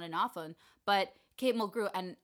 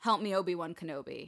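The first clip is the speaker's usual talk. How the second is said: mock curt, clipped pleading tone. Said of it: "it's very curt".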